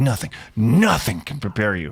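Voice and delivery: emphasis lands on the second, repeated "nothing". Quoting a tagline that always seemed weird: stress on the second 'nothing'. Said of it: "I see the emphasis there".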